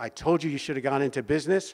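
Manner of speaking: derisive, taunting, mocking father voice. Retelling a father's remembered words: father's mocking voice. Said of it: "I hear my father's mocking voice".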